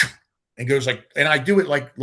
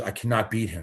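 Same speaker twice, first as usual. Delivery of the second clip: put-on heavy German accent, lower and quieter; 6 semitones lower, 6 dB quieter than usual. Retelling a training partner's words at the gym: imitating Akim's heavy German accent. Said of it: "he spoke in a very heavy accent".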